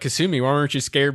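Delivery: plain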